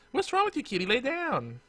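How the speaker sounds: put-on very high, soft, cooing baby talk.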